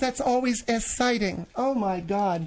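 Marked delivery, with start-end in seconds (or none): none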